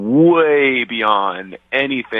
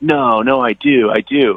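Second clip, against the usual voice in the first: very slow, high, drawn-out, worked-up, upset tone; 6 semitones higher than usual. Retelling a date insisting she looks bad: imitating someone working herself up. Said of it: "working herself up".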